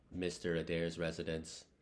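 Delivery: rote, flat, machine-like mechanical monotone. Narrator reading a character answering the telephone, flat mechanical tone. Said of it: "he said in a flat mechanical tone".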